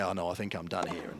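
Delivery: put-on sheepish tone. Retelling a player's reply when asked to answer in his native language: retelling a sheepish reply. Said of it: "So Alex sort of said sheepishly".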